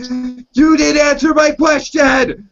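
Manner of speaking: very high, loud, drawn-out, shrieking scream. Retelling a character's line after the phone is answered: imitating someone screaming. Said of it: "she's just screaming out, she's like".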